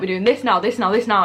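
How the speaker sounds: ordinary talk, nothing marked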